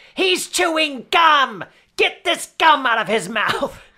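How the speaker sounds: very high, very slow, upset whining tone. Retelling a movie scene where the character gets upset: Nathan Lane impression. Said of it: "It's not a bad Nathan Lane".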